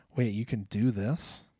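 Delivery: normal talking voice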